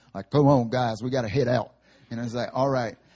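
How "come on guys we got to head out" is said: heavy, thick, laid-on Southern drawl. Retelling the football coach calling the team out during practice, imitating Coach Lewis's Southern accent. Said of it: "thick Southern accent".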